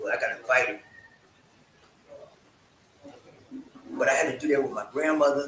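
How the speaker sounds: tearful voice, holding back tears. Talking about seeing loved ones pass away, holding back tears. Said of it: "I'm feeling like crying right now".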